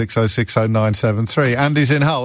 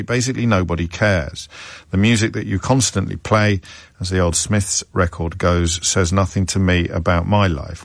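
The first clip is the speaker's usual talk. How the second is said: plain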